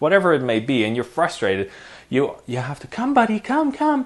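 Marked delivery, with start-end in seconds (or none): 2.9-4.1 very high, upbeat, coaxing, encouraging voice. Showing how to call a dog after taking a breath: positive tone. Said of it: "You have to do that kind of attitude".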